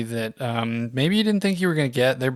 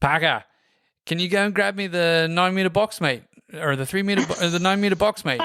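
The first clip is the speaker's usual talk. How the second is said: high-pitched put-on Australian accent; 5 semitones higher than usual. Retelling a coworker asking for a box: imitating an Australian accent. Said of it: "he'll kill me for doing the accent".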